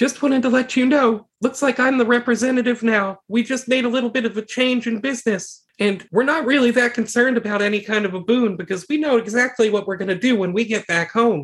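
high, muffled voice, as if masked. [name] moves closer so she can be heard, voice muffled in the suit. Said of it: "her voice is a little muffled in the suit".

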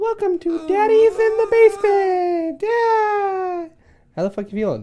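very high, squeaky, childlike put-on voice. Opening the show Daddy's in the Basement, the speaker greets listeners in a kid voice. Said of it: "Is that what your kid sounds like".

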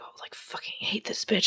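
very quiet, whispered mutter under the breath. Retelling a character's aside to another speaker: imitating muttering under breath. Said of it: "under his breath, he's like".

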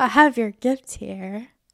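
put-on teasing, taunting tone. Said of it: "Why'd you say it like that?".

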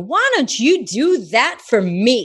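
slow, put-on New York accent. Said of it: "my character ends up being my New York character".

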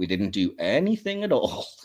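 slow, smug, self-satisfied, knowing delivery. Retelling what the Organians said about the guards: imitating smug Organians. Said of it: "in that kind of smug way".

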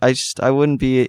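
ordinary delivery

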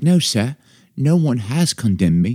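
put-on British accent. Reading a woman's line from a text aloud: British accent. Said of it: "it just feels like it should be read with a British accent".

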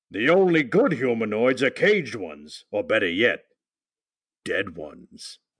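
swooping, cartoonish caveman voice. Closing the show with the group's classic catchphrase, in a Fred Flintstone voice. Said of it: "you read it like Fred Flintstone".

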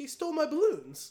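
put-on sad young child voice, high. Retelling a man's complaint about his stolen balloons: imitating a dejected five-year-old. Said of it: "it sounds like an actual dejected five-year-old who lost his balloon".

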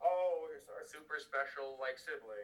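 talking down, almost patronising tone. Describing how the family treated a sibling, in a mock-condescending tone. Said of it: "It was in a really almost condescendingly".

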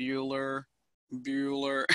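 dull, level, flat, droning monotone. Warning against a dull voice, imitating the Ferris Bueller's Day Off teacher monotone. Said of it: "Having a voice that's not monotone ... don't go out there and sound like the teacher from Ferris Bueller's Day Off, going like".

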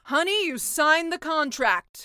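loud, high-pitched roaring sea witch voice. Narrator voicing the sea witch speaking to the mermaid: roaring sea witch. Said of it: "roared the sea witch".

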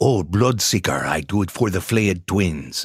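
put-on character voice with Spanish-speaking accent.

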